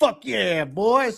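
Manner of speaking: pumped, fired-up cheer with voice pitched high. Imitating a fired-up quarterback on the sideline: imitating Philip Rivers. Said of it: "He's like".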